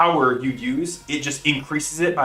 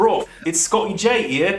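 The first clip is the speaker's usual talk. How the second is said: put-on British accent, pitched up; 6 semitones higher, 3 dB louder than usual. Speaker showing off his British accent. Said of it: "I can do my British accent".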